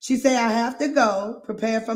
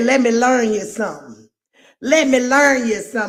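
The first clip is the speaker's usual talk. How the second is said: loud, put-on, folksy country accent; 6 dB louder than usual. Quoting what he said, in a country accent. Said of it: "I love a good country accent".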